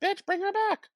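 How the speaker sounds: exasperated, very high, squealed delivery. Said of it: "I'm like".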